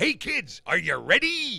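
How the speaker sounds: loud, high cartoon pirate call. Asked where his pirate voice came from, he does the SpongeBob SquarePants intro pirate voice. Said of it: "my imitation of him".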